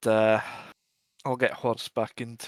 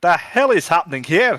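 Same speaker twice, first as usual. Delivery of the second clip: loud, very authoritative put-on big-man voice; 5 semitones higher, 5 dB louder than usual. Voicing a character arriving at the camp, in an authoritarian big boy voice. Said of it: "I am going to put on my most authoritarian big boy voice".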